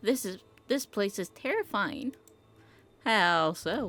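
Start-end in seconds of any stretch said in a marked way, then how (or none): 3.0-3.9 coy, flirting voice. Playing a character, answering another character's remark: flirty voice. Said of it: "Why am I doing a flirty voice".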